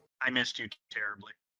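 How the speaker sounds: angry delivery. The speaker repeats a line to show how she said it: said angrily. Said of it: "I just said it angrily".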